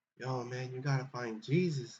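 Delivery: slow, drawn-out put-on priest voice. Describing a movie scene, imitating the movie priest's voice. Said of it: "the priest voice also sounds kinda like Ben's".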